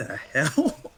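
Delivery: slow, high, stunned, drawn-out disbelief. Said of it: "And I'm like".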